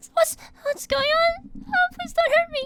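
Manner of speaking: put-on very high, frightened, scared little girl voice. Voicing a scared little girl found in a box: scared little girl voice. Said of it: "this scared little girl kind of covering her eyes".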